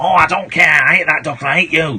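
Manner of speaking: put-on puppet monkey voice. Retelling a ventriloquist act, the puppet monkey answering: Cuddles the monkey voice. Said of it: "That's the same voice you do for me".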